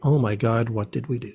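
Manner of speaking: ordinary delivery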